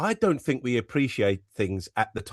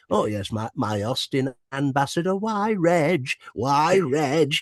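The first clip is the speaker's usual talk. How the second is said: put-on slightly northern lilt, higher; 4 semitones higher than usual. Showing the Max character voice, inspired by John Shuttleworth: John Shuttleworth-inspired Max voice. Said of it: "I was inspired by John Shuttleworth".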